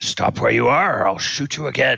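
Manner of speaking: creaky, rough, fast, threatening goblin voice. A game master voices a hobgoblin holding up his bow at another character, yelling hobgoblin. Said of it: "he yells at Thaldor".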